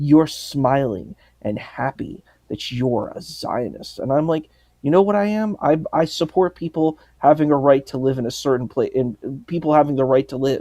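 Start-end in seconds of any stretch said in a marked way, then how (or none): 0.0-4.0 put-on disgusted tone, slower. Quoting a woman who called the speaker a Zionist, imitating someone's disgust. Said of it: "with this like complete disgust in her voice".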